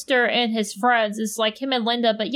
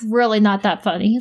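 put-on exasperated dad voice, fed-up, louder; 2 semitones lower, 4 dB louder than usual. Retelling what a dad said to a laughing child: imitating an exasperated dad. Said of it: "my dad was, like, so done with me laughing".

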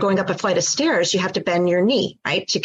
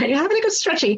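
put-on English accent, pitched very high; 9 semitones higher than usual. Quoting an owner's question about having a good stretch, English accent. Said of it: "In an English accent".

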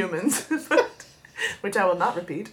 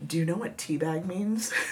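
mock under-breath muttering, quieter and lower; 3 semitones lower, 6 dB quieter than usual. Speaker recounts her boss coming up to her during a salon word game; mimicking boss under her breath. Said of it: "under her breath be like".

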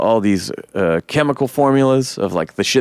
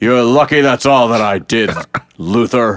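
strained, loud, forced fake angry voice; 5 dB louder than usual. Imitating Henry acting mad: imitating Henry's forced low mad voice. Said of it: "he sorta acts like when a girl tries to do a low voice when he acts mad".

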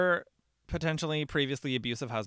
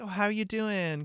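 put-on happy, bubbly voice, pitched higher; 8 semitones higher than usual. Retelling a film scene, quoting the cheerful wife: imitating Wendy, happy and bubbly. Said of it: "she's so, she's, like, happy and bubbly still".

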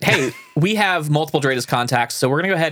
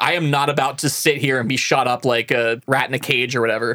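plain

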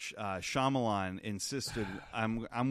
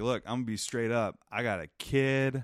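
imitated pleading voice, louder; 2 semitones higher, 5 dB louder than usual. Retelling how a character begs for her life: imitating someone pleading. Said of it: "she starts kind of pleading her case".

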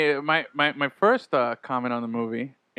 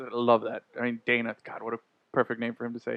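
normal talking voice

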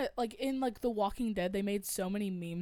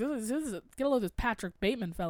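usual speaking voice

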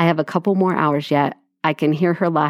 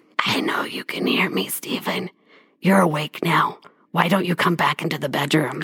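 breathy, rasping, low, gravelly whispered witch voice; 3 dB quieter than usual. Telling a story, a voice calls Stephen to the bedroom, in a low gravelly witch voice. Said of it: "low, gravelly voice that sounded like a witch".

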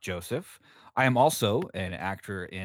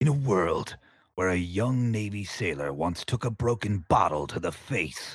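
epic, dramatic blockbuster movie-trailer narrator voice; 3 semitones lower than usual. Finally doing a long-wanted bit, dramatic movie-trailer voice. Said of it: "I've just always wanted to do the trailer voice".

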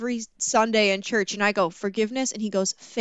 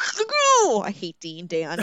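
angry and heated, very drawn out, slow, swooping. Recapping a movie's plot, the speaker reacts to a character: heated, angry. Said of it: "I'm so heated".

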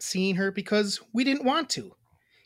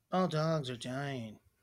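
mock flat deadpan, low, slow, no feeling; 5 semitones lower, 10 dB quieter than usual. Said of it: "She just says that, like, monotone and deadpan".

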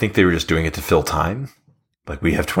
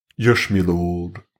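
put-on British fantasy-style character voice. Describing how Igor sounds, the speaker demonstrates a Warcraft 2 character voice. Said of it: "Igor sounds like the characters from Warcraft 2".

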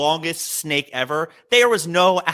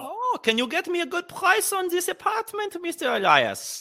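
terrible fake Indian accent, very high-pitched; 4 dB quieter than usual. Retelling an apartment visit, in a bad fake indian accent. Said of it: "That's the worst Indian accent".

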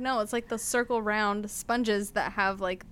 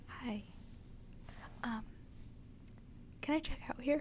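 very hushed, soft, friendly customer-service voice; 2 semitones higher, 13 dB quieter than usual. Retelling a woman at a Target register, imitating her friendly, soft voice. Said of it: "Like very friendly, very not loud".

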